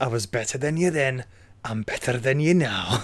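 fake Scottish accent with laughter.

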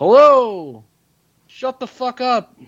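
very high pitch, slow, words dragged out. Quoting a stand-up bit to friends: imitating Robin Williams' New York Echo bit. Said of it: "it's like the New York Echo from, um, Robin Williams' stand-up".

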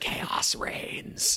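sinister, evil creature whisper. Joking about a loose chair screw falling out: evil fox whispering. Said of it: "an evil raccoon or fox whispering".

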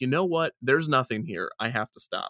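ordinary talk

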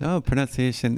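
ordinary talk, nothing marked

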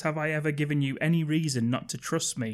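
ordinary delivery

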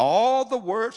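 high, loud, slow, eager unison. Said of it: "listen to the attitude now. One accord now".

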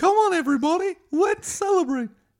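very high, very loud cartoon mouse voice. Acting out Eric Cartman meeting Mickey Mouse; do a Mickey Mouse voice. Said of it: "when Eric Cartman met Mickey Mouse".

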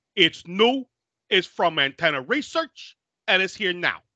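put-on somewhat high, half-Boston accent. Mocking how a man delivers a line about the movie, imitating a Boston-like accent. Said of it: "Is that like a Boston accent?".

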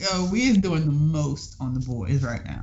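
ordinary talk, nothing marked

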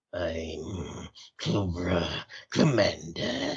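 voice pushed down into the throat. Describing another take on the role: guttural Cobra Commander voice. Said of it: "he kinda had that guttural".

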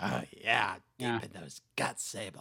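put-on wrestling promoter voice. Continuing the quiet Vince McMahon impression: Vince McMahon impression. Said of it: "you just did Vince".

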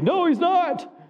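put-on shrill yell, very high pitched. Speaker imagines his wife yelling at him through the tv, imitating wife yelling. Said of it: "My wife's yelling through the TV".

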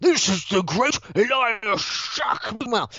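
big, booming voice, high and slow. Borgel bursts in to introduce someone, Borgel's booming voice. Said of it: "his voice is booming".

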